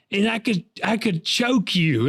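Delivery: mock heated, furious, fired-up voice, pitched high. Retelling the buddy's mom turning to threaten the speaker: imitating a fired-up angry mom. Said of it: "she was so fired up".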